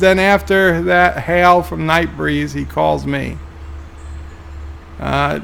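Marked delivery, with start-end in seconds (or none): none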